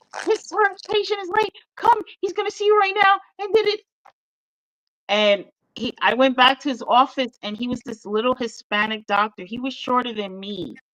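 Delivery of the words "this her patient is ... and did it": pumped-up, rushing, excited rambling. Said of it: "She's like".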